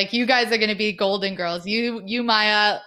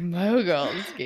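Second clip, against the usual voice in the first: mock seductive voice, lower pitch; 3 semitones lower, 3 dB quieter than usual. Repeating another speaker's words to tease them: imitating a seductive voice. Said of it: "It's like the most seductive voice".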